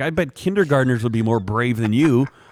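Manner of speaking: mock jeering arena announcer. Retelling how the announcer taunted the runners: imitating the announcer taunting. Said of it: "It's like".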